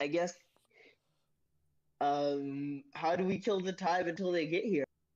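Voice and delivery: teary voice with a drawn-out um. Voicing a crying character to players in a tabletop game, tearful NPC voice. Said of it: "she sort of like is wiping her tears away".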